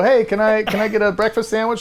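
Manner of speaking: mock, high, brash shouting New York-style East Coast accent. Mocking East Coast people who shout at each other, retelling an East Coast shout. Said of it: "They're shouting at each other".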